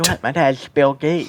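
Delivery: put-on lisping voice. Friends acting out mean kids on Xbox Live, one in a lisping voice. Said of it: "good lisp accent there".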